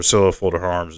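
ordinary delivery

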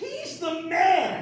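high, very loud triumphant shout at full lung power.

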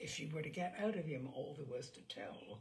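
ordinary delivery

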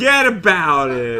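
loud Brooklyn accent, put on. Asked where they are from, a guest jokes about a friend from Brooklyn, in a Brooklyn accent. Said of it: "That's my best Brooklyn accent".

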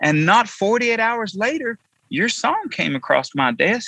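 very high, swooping sing-song voice. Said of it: "I'll give my best [name] impression".

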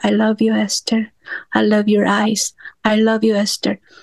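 very soft, quiet voice. Showing a self-love exercise, saying it to yourself in a very soft voice. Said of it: "in a very soft voice".

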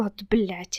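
quiet muttering under breath. First-person narrator reads his own aside after she shouts at him, muttered under breath. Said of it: "буркнув собі під ніс".

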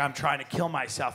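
mock grave, serious delivery. Retelling what Bud said after the boat crash: imitating Bud saying it very seriously. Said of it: "he said it very seriously".

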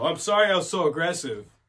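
loud, aggressive delivery. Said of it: "that's how I said it too".

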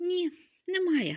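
meek, modest, very high-pitched voice. The Scarecrow answers the lion's praise, modestly objecting. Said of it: "скромно заперечив Страшило".

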